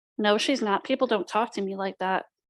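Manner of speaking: plain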